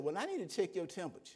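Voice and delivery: ordinary talk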